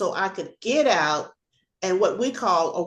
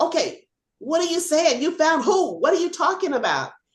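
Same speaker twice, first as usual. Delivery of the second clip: put-on high, screaming, confused-sounding voice; 8 semitones higher than usual. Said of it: "And I'm screaming right back at them".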